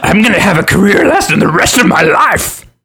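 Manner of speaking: shrill, loud gimmick voice. Joking about a comedian's old gimmick: Bobcat Goldthwait voice. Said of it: "He doesn't do that voice anymore".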